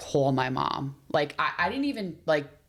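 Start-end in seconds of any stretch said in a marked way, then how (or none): none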